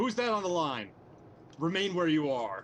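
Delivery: yelling commandingly. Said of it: "try to put on my most commanding voice".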